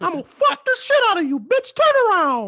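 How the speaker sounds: very high-pitched, loud, swooping voice. Describing bed partners doing a cartoon voice, acting out a line: Mickey Mouse voice. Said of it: "do that Mickey Mouse while we fucking".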